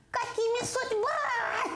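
very high, slow, thin voice with a laugh.

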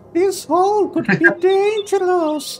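very high put-on fake woman's voice. Playing a part in a scene with others: put-on lady voice. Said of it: "I'll do my best lady voice".

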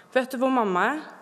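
ordinary delivery

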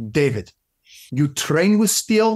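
attempted Russian accent. Quoting a man who looks him in the eye and speaks, attempted Russian accent. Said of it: "I'm trying with a Russian accent".

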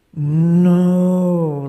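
loud, drawn-out no, lowed like a cow. Telling of a cow that called out no: cow-like 'no'. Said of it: "He was just saying no in his cow voice. No, like that".

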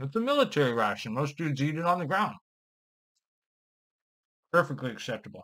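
muffled speech with mouth full of food. Reviewing a military ration while still chewing; talking with mouth full. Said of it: "talk with my mouth full".

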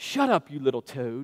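put-on British accent. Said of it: "in his British accent".

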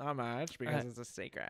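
put-on, affected, effeminate accent and manner. Repeating a quoted answer after being asked: put-on effeminate accent. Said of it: "add an accent to that, like, an effeminate accent".

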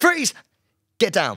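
trembling, nervous tone. Performing the cop's first bust again for the other speaker: shaky nervous cop voice. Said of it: "It's a bit shaky".

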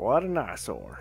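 soft, muttered, put-on male game-character voice. Playing a game, the speaker reads a character's line in a put-on voice. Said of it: "I'm trying to do a voice for him".

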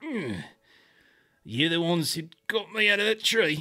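very loud, pained voice. Voicing a wounded woman waking in a cot: grimacing while talking. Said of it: "she's kinda grimacing as she talks".

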